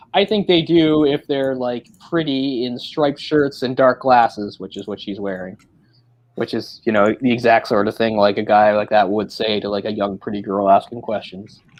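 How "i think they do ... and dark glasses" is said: ordinary delivery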